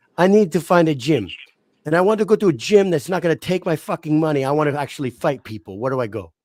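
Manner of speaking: put-on heavy Russian accent. Quoting a woman's words to the speaker: heavy russian accent. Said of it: "the heaviest, like, Russian accent".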